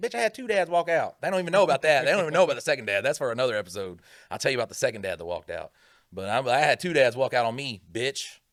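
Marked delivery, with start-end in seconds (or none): 0.0-1.2 play-acted, high-pitched, loud yelling. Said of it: "I'll yell at fucking exploited youth".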